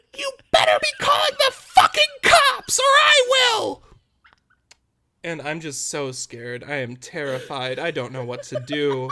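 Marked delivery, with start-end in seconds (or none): 0.2-3.8 piercing shriek, very high and very loud. Retelling a story, imitating the little old lady who came out yelling. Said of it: "and she yells".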